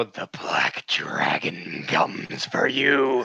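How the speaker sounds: eerie, creepy, very slow menacing tone. Voicing a character climbing onto a wagon to threaten someone: slow creepy voice. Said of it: "Very slow and creepily".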